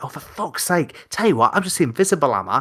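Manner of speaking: exasperated, angry outburst. Retelling losing temper at a bar: imitating own angry outburst. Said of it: "I was so angry".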